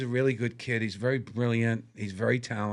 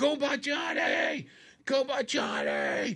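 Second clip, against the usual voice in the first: put-on very high-pitched, very slow, drawn-out drunken holler. Telling a story about a drunk guy at the back of the line, imitating him yelling. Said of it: "and he yells out".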